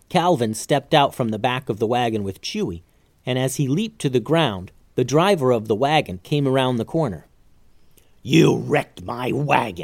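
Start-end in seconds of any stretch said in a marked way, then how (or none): 8.2-9.8 slow, drawn-out growling words. The wagon driver confronts Calvin after the crash, growled. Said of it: "he growled".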